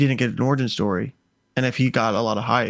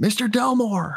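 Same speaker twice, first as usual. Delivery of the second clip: mock screaming, very high and shrill; 11 semitones higher than usual. Retelling a movie scene where the hero calls a name: imitating a scream. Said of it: "And he screams".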